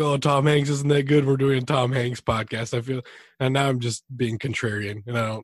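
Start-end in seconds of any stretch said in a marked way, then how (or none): none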